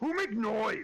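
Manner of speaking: thunderous, booming voice pitched very high. Game master voices an unseen creature answering a player's call, big booming voice. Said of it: "you all hear in a big booming voice".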